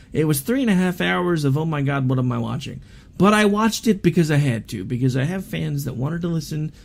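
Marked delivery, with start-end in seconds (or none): none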